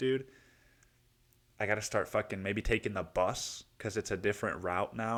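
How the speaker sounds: plain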